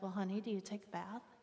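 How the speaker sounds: mock gentle, soft, tender, loving voice. Speaker recounts what she asked them, imitating her loving tone. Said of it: "she looks at me in her loving way".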